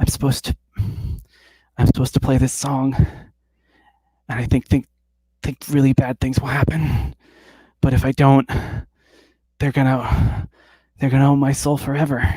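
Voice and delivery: theatrical half-whisper. Voicing a woman who left something at the store, half-whispering, trying not to be overheard. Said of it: "she whispers she whispers like she's trying to not be overheard".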